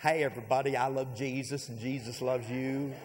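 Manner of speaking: heavy, phony, put-on drawl. Mocking a churchgoer greeting coworkers at work: phony Joel Osteen drawl. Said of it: "put on the Joel Osteen look".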